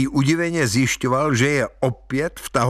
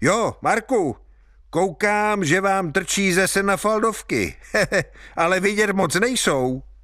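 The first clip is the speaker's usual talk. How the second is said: cheeky, impish shout, high-pitched; 7 semitones higher than usual. Hajný calls after Marek as he walks away: mischievous call-out. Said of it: "Hajný za ním uličnicky křikl".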